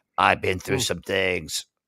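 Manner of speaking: deep, husky smoky tone. Describing an actress whose face does not match her voice: imitating Milla Jovovich's smoky voice. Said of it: "the voice of, like, a heavy smoke".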